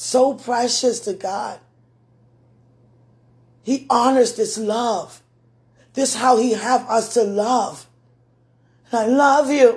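weeping with joy. Speaking of a love precious to God, crying with joy. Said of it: "Excuse me for crying".

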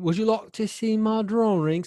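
very high British cartoon voice. Speaker repeats a cartoon line for UK listeners to judge: Simon cartoon voice. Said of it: "me nailing that voice".

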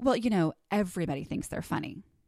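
put-on condescending tone. Retelling a remark overheard from someone, imitating their condescending tone. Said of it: "overheard someone say condescendingly".

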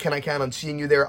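ordinary talk, nothing marked

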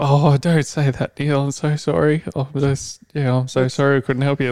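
put-on properly sorry, downcast, sad, apologetic voice. Retelling a phone call where the worker could not help: imitating a sad call center worker. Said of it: "all fucking proper sad".

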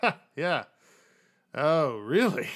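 loud, slow, weird chuckle running through the words. Voicing a guard reacting to a copycat claim: weird chuckle while talking. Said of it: "do that sort of weird chuckle".

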